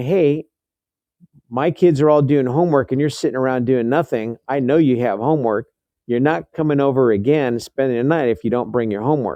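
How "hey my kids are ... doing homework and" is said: plain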